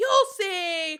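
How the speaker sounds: mock yelling. Retelling a scene where someone in the departing dinghy yells: imitating someone yelling. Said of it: "he, like, yells at them".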